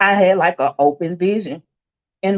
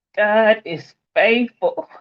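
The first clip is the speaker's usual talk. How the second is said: emotional, choked-up voice, close to tears; 3 semitones higher than usual. Introducing herself before telling her story, emotional, close to tears. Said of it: "I'm already emotional".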